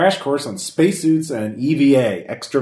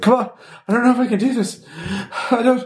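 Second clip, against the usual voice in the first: put-on very high voice, panic creeping in; 12 semitones higher than usual. Speaker retelling a trainee failing several times, acting out rising panic. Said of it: "You can hear the panic rising in his voice".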